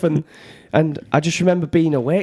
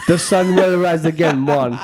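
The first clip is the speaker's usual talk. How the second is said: put-on Jamaican accent. Asked for another accent, speaker offers a second jamaican one: put-on jamaican accent. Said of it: "Eastern Jamaican".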